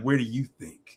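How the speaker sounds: acted-out sultry, suggestive, coy seductive tone. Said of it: "she said it so seductively".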